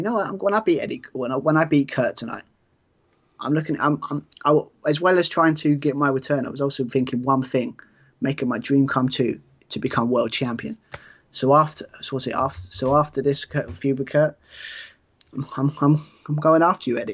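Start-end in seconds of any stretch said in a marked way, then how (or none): none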